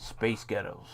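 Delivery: put-on American accent. Speaker demonstrating a pronunciation trick, saying the phrase in an American accent. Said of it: "Space Ghettos in an American one".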